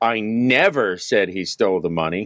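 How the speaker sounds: never stressed and pushed with a rise.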